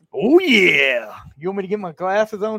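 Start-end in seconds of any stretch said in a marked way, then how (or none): 0.2-1.2 put-on gravelly wrestler voice, louder. Answering a request to do a Randy Savage impersonation: Randy Savage impersonation. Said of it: "can you do a Randy Savage impersonation?".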